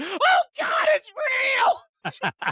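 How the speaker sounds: blood-curdling shriek, swooping, very high, drawn-out. Retelling a scream during a game: imitating a blood-curdling scream. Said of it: "she fucking screamed, like, blood-curdling scream".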